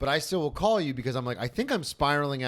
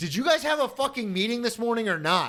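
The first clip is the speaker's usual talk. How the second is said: put-on angry shout, higher pitch; 10 semitones higher than usual. Retelling losing patience with police, imitating his own angry shout. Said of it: "And I finally shouted".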